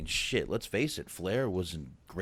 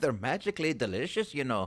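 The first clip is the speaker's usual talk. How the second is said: put-on Indian accent throughout, pitched up; 7 semitones higher than usual. Quoting a cereal ad slogan, in an Indian accent. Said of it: "You went totally Indian".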